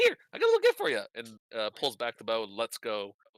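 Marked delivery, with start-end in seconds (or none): 0.0-1.0 loud, very high, squeaky, tiny sprite voice. Voicing a sprite who draws a bow on the party: little sprite voice. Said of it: "takes out a bow and arrow and says".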